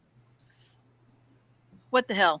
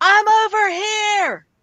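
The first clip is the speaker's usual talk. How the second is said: loud, slow, high yell. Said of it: "I'll yell".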